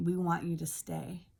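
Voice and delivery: put-on whispering. Retelling what the treating gentleman said leaning in: imitating someone whispering. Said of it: "he kinda leans in and he whispers to me".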